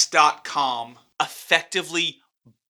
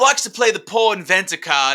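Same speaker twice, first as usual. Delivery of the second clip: put-on Australian accent, pitched higher; 4 semitones higher, 4 dB louder than usual. Quoting Elon's jab at another man from a story, Elon quote in Australian accent. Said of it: "that's Australian".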